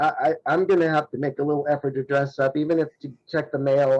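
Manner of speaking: normal talking voice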